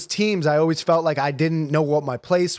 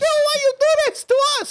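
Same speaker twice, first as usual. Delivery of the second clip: put-on acted old woman scream, higher. Retelling how the grandmother screamed at the babysitter: imitating grandmother screaming. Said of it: "Screaming at her".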